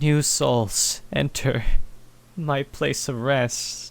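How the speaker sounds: sorrowful, mournful voice with echo. Narrator voicing a voice echoing through a cathedral, sorrowful voice. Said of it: "but a sorrowful voice".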